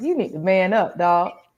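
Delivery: ordinary delivery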